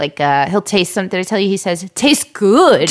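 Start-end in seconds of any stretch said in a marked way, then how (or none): 1.9-2.9 mock German tourist-style accent. Quoting a little boy who talks like a german tourist: german tourist accent. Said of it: "That's the German tourist".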